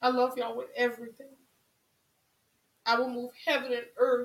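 loud fervent emotional voice. Speaking to the audience about how much they mean, trying not to get emotional. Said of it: "I'm trying not to get emotional".

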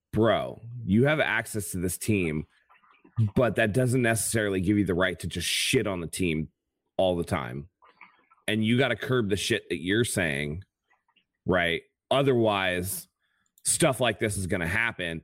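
ordinary talk

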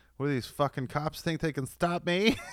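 high, flamboyant, campy superhero voice.

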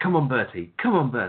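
plummy, upper-class, posh cheering voice. Retelling wrestlers cheering backstage, in a posh imitation. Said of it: "But less posh".

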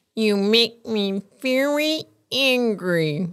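cartoon space alien voice. Telling the others to close their eyes and imagine, doing Marvin the Martian voice. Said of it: "you're the space guy from".

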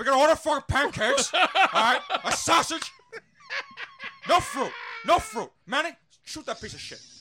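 very loud, high, animated, swooping movie-gangster voice. Pretending to order food by phone in a Tony Montana voice. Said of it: "You should let me do it in a Tony Montana voice".

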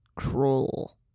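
super dramatic movie-title style. Saying the movie title like the movie does: super dramatic movie-title delivery. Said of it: "If you say it like the movie".

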